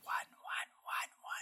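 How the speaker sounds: soft, unvoiced whisper, almost silently mouthed. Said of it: "very quietly, almost silently mouths".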